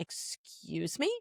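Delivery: deeply offended, breathy near-whisper. Retelling own reply to parents who disliked a show: retelling own offended reply. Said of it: "I got so offended".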